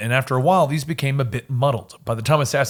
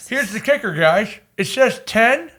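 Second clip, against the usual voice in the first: mouth full, much higher; 8 semitones higher than usual. Pointing out a detail to the group, talking with mouth full. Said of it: "you've got that in your mouth".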